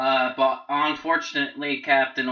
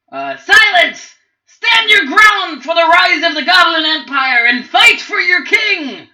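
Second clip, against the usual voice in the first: very high, very loud, shrill tiny goblin screech; 12 dB louder than usual. Narrating a fight, voicing the tiny goblin with the crown, screaming. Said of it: "The little tiny goblin with the crown in the back screams".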